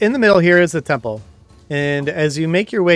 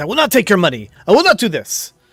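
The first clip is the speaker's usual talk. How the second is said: heated arguing, much higher; 5 semitones higher, 4 dB louder than usual. Game master voicing a man caught in an argument with three people, arguing. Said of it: "he's in sort of an argument".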